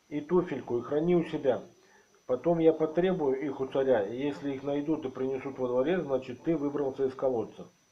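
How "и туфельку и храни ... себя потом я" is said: usual speaking voice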